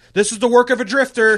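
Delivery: all-out scream, very high, shrill and loud. Imagining a character being fed into a wood chipper: imitating Mo screaming. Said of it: "he'd be screaming".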